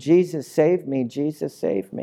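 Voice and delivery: ordinary talk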